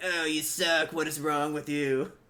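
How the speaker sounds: heckling, nagging, put-down tone. Mocking a gamer's playing with a jeer: Phyllis Diller voice. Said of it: "turned into, like, Phyllis Diller".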